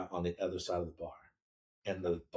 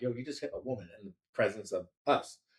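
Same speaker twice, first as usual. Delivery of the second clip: ordinary talk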